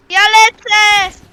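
excited, loud, slow, drawn-out yell.

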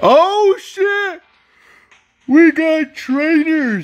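yawning while speaking. Reacting to getting trainers in a game, yawning while speaking. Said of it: "I was yawning right there".

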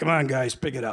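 low, rough, gravelly voice. Retelling what a man in a little coat said as they ran past, in gravelly voice. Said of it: "[in gravelly voice]".

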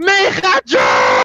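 high, slow, drawn-out shout.

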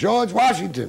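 loud, high-pitched shout. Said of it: "So he yells".

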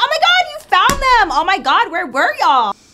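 high, loud, relieved, excited squeal.

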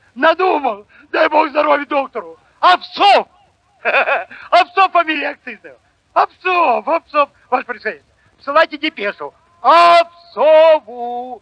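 glad, joyful, high-pitched shout bursting out. A man bursts into the general's study having remembered the name; shouting joyfully. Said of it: "закричал он радостно".

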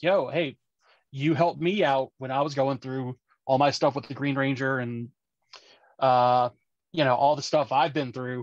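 ordinary talk, nothing marked

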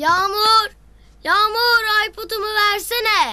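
shouting. In a drama scene, calling out to someone, shouting. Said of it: "Ne bağırıyorsun evladım?".

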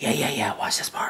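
hushed whisper. Retelling talking to a companion during a movie, whispering. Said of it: "I'm whispering and shit so she knows movie theater tone".

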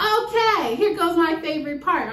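plainly sarcastic. Speaker announcing the next step, one they hate: sarcastic. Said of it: "I hope you can hear the sarcasm".

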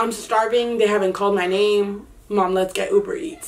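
ordinary delivery

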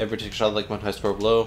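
whole line rattled off very fast in one breath. Explaining the rules to the others before a break, very fast. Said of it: "You said that so fast".

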